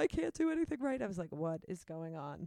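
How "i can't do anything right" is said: play-acted bawling, very high, very loud, rushed. Retelling what a woman the speaker had picked up said, imitating someone bawling. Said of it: "then she just starts bawling like uh".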